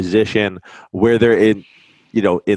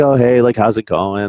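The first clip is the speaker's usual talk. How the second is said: mock shy, subdued, quiet tone. Retelling meeting someone in person before his Instagram live: imitating shy, subdued greeting. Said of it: "shy and, like, subdued".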